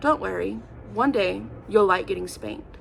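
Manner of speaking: mock, super stern, severe tone. Retelling what a man told the speaker at eleven years old, super stern warning. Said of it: "super stern".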